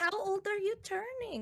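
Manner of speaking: put-on Filipino accent fully on. Retelling a woman asking her age, in a Filipino accent. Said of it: "Filipino accent got activated and was just like".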